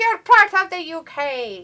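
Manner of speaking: slow, high put-on Scottish brogue. Imitating the crowd that cheers for a Scotsman: Scottish accent. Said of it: "It sounded very Scottish".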